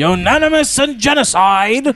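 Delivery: high, loud, slow called-out voice. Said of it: "That's what Dapper used to call me".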